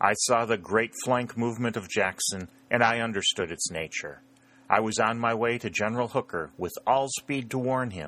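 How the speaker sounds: usual speaking voice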